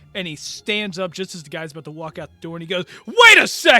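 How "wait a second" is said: very loud, very high, shocked, angry shout. Voicing a player character who stops a card player leaving: shocked, angry. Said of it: "kind of like a shocked, angry look".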